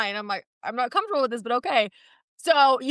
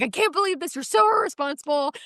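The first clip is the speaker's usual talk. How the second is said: mock screaming; 4 semitones higher than usual. Retelling an argument at a host stand, the speaker imitates someone screaming at him. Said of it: "He's screaming at me".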